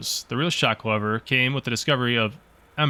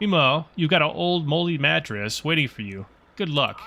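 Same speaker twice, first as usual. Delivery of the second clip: smug, condescending, mocking voice, radio-like sound; 3 semitones higher than usual. Over the radio, the Chief signs off to the lighthouse keeper: Chief's mocking radio voice. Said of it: "This is Chief. / Gotta say, your work was mediocre at best. Can't imagine why they even let you be a lighthouse keeper. / Someone's calling on the radio".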